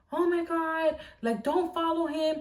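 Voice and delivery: high, frantic, loud screaming. Retelling the mother on the phone: imitating mom screaming. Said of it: "my mom is also on the phone screaming".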